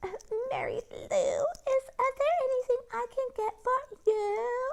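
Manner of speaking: sugary, over-polite, syrupy-sweet, very high-pitched voice. Reading a scene where a boy mimics his sister: mimicking in a real sweet voice. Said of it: "saying in this real sweet voice".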